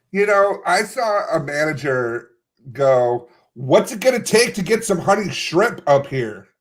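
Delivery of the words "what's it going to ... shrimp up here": high, entitled, demanding yelled call-out. Retelling what a manager said: imitating a manager yelling. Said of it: "you didn't need to yell".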